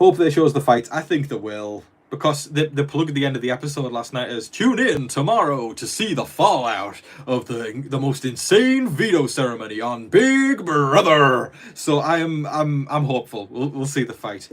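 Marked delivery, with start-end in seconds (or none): 4.5-11.5 slow, swooping put-on American accent. Quoting the episode's closing plug: put-on american accent. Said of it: "my wonderful American accent".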